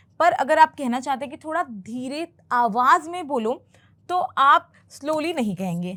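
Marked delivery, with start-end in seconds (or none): none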